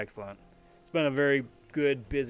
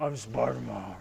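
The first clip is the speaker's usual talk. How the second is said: gravelly put-on superhero voice; 2 semitones lower than usual. Joking about how a Spider-Man line should be said, gravelly Batman voice. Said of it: "You gotta say it with like the gravelly Batman voice".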